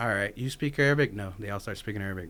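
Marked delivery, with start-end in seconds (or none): none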